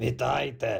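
threatening huffed delivery. The fat cat answers the bowing striped cats' greeting, menacing huff. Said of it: "грізно засопів товстун".

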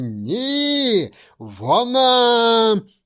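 all-out shrill yell, very high and loud. She stands up in the boat and calls to the narrator, shouting with all her might. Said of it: "що було сили, крикнула мені".

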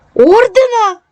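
delighted, joyful, very high exclamation. Reading a story aloud, the narrator hearing about Maksym's medals: joyful cry. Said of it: "радісно скрикнув я".

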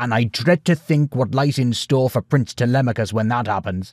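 ordinary delivery

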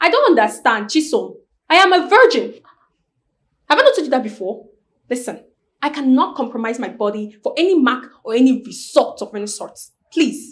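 heated and indignant. Refusing the question Chisom asked, angry. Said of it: "don't be angry".

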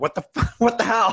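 high, laughing outburst of amused disbelief.

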